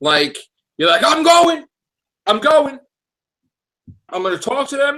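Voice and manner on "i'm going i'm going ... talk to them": very high, pumped-up, hyped wrestler promo voice. Imitating someone going to a meeting, like a hyped wrestler. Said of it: "it's like a wrestler".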